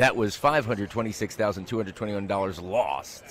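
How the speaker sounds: ordinary talk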